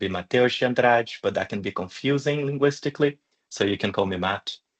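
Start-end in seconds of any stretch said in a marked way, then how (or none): 0.1-1.1 name said with Brazilian Portuguese pronunciation. Introducing yourself and giving your own name: brazilian accent. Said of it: "if I would say it in my Brazilian accent".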